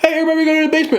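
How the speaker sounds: put-on easygoing, very high-pitched, super chill delivery. Retelling neighbours warning about a tornado: imitating a very chill tone. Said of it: "they're saying it, like, so chill".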